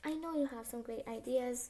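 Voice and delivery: ordinary talk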